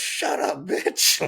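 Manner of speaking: really loud, rough yell. Retelling someone heckling during a taping, retelling a really loud yell. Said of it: "like really loud".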